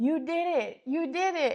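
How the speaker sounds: mock scream, high and loud. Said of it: "He just screams to himself".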